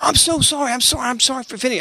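mock, high voice in sheer shock. Retelling a guy's apology after being rebuked: imitating someone in shock. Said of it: "he went in this incredible shock".

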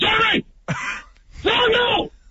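put-on, very high-pitched called-out shout. Recounting a football play, re-enacting shouting at a teammate from the line. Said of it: "and I'm shouting".

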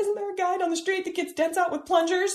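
very high, hysterical sobbing. Retelling phoning her boyfriend from the garage, reenacting hysterical sobbing. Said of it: "just like hysterically sobbing".

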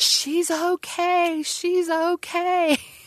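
mock very high, slow, drawn-out rising scream. Retelling mom's story of an office lady running across the field: retelling a scream. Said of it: "came running and just screaming".

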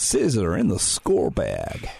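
slow, swooping, terrible put-on American accent. Chatting with a co-host about a player, in a terrible american accent. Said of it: "that was a terrible american accent".

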